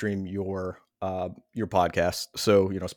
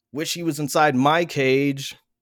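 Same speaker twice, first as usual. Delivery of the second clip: put-on high, gushing, smitten teen voice. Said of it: "I would have been writing a Zanga".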